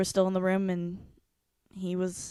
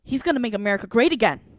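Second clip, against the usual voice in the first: put-on huffy, indignant, raised voice; 3 semitones higher, 6 dB louder than usual. Retelling how she answered when asked why she voted, mock-huffy reply. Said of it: "she gets huffy with me".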